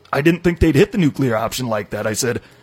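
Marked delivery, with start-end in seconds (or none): none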